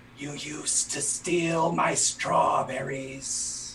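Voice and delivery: half stage whisper. Telling a game scene, voicing the shadow speaking to Sildaris, shadow's half-whisper. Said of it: "the shadow whispers".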